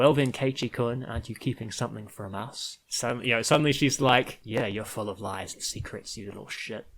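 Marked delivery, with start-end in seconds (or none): 0.0-2.8 imitated cold, controlled, icy tone. Retelling a scene where she confronts Keiichi-kun, imitating a cold voice. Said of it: "in a like very cold voice".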